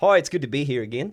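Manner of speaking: booming, very loud, put-on fake Australian accent. Doing an impression of an australian guy, in a put-on australian accent. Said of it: "This is an impression of an Australian guy".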